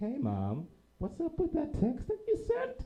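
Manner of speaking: very high, innocent, sing-song, harmless little voice. Retelling calling Mom about a text she sent, high non-threatening voice. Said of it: "I got the high voice because that says I'm not a threat".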